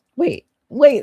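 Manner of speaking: voice cracking. Calling after someone who said they are leaving: voice cracking. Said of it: "My voice actually cracked".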